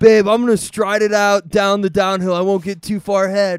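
very loud, high shouted call. Retelling how a runner talked to his girlfriend mid-race: imitating a runner. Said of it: "It was a perfect impersonation".

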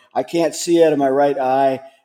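normal talking voice

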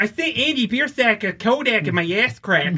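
put-on Upper Midwest Michigan accent with leaned-on S sounds. Mocking how people from Michigan and Wisconsin talk: imitating a Michigan accent. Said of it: "why do you put so much emphasis on the S?".

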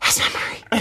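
hushed, whispered under the breath. Retelling being unable to speak in a stairwell: retelling own whisper. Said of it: "that's how I was, like, whispering".

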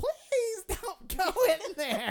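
mock, very high, very loud, drawn-out, wimpy whining. Retelling a friend begging him not to go in: imitating a wimpy plea. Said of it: "He sounded like a little bitch".

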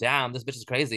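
ordinary talk, nothing marked

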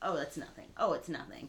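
ordinary talk, nothing marked

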